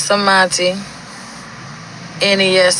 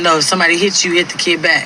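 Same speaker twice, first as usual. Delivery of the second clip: normal talking voice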